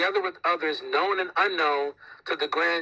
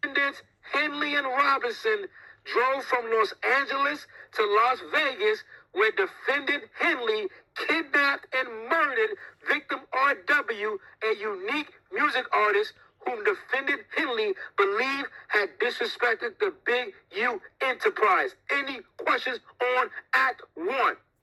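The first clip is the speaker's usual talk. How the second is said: grave, emphatic, earnest reading, pitched up; 7 semitones higher than usual. Speaker reads an indictment aloud, mock reading with great conviction. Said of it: "He's reading that with such conviction".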